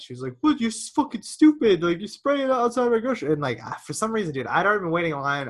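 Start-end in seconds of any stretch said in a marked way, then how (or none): 0.4-3.3 acted-out shrill, very high, furious yell. Retelling a quarrel in a grocery line: imitating a yelling lady. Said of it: "the lady starts fucking yelling".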